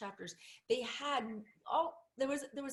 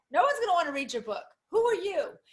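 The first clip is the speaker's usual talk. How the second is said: put-on disapproving mother voice, high and raised; 5 semitones higher, 12 dB louder than usual. Repeating what people tell a writer about their book, in a mother voice. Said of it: "it's my mother voice".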